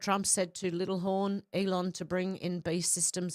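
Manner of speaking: ordinary talk, nothing marked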